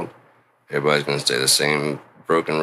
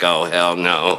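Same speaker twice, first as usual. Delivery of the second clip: put-on speech with laughter through the words; 2 semitones higher, 3 dB louder than usual. Retelling a reaction to the big brother talk: imitating laughing speech. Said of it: "he started laughing like".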